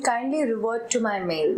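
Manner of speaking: usual speaking voice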